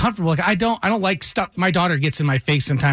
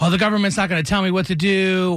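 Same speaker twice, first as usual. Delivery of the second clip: ordinary talk, nothing marked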